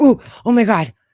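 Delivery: sudden, startled, scared outburst. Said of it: "Fucking scared the shit out of me".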